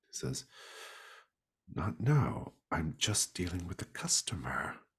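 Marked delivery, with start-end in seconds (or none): 1.7-4.7 mimicked mutter under breath. Describing a man behind a window muttering while with a customer, retelling a mutter. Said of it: "he mutters".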